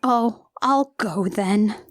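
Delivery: mock rebuffed sadness, very slow. Retelling a film scene where a character feels rebuffed: imitating someone sad. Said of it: "Grace feels rebuffed and is sad".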